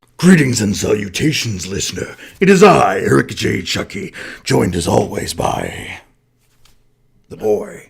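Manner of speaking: poor put-on monster voice. Opening the podcast intro to the listener, in a shitty Venom voice. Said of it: "That was my shitty Venom voice".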